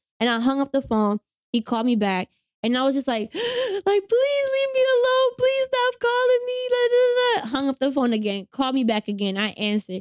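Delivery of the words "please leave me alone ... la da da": very high, slow, tearful, crying voice. Retelling a man calling back again and again, retelling her own crying plea. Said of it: "because of the way I was crying".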